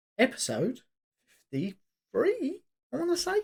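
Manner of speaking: little voice crack on the words, pitched high. Speaker announcing the episode number: voice cracking. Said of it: "I had a little voice crack there".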